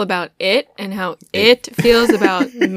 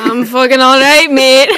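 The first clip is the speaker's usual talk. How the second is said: loud, booming, put-on Scottish accent; 4 semitones higher, 7 dB louder than usual. Podcast guest answering the host's greeting, doing a Shrek impression.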